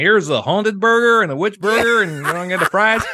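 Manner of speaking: put-on American accent. Joking how a haunted village in the States would sell it: American accent. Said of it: "With that exact accent, too".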